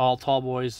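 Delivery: ordinary delivery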